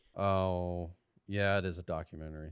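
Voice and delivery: downcast. Checking whether the film is a documentary, sounding sad about it. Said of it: "Why do you sound so sad about that?".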